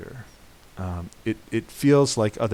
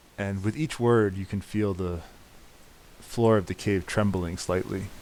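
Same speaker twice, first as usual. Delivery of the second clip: plain reading voice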